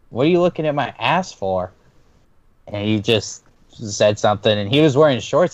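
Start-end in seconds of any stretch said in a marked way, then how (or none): 0.1-1.7 playful, joking, teasing ribbing tone. Telling a story, recalling their reply to a friend's comment, retelling a joking remark. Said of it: "I jokingly".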